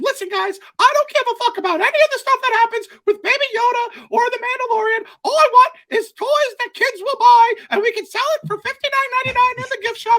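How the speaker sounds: very high, shrill, loud cartoon mouse voice. On a podcast, act out Mickey Mouse coming in and addressing the guys, in a Mickey Mouse voice. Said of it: "I'm still talking like Mickey Mouse".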